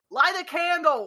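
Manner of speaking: high shout. In a game, a player's character calls out the door, yelling. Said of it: "I'm gonna yell out the door".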